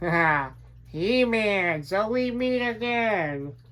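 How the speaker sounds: high, slow villain taunt with cackle, words drawn out. Speaker says he just wants to do the voice; Skeletor voice. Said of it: "I just want to do a Skeletor voice".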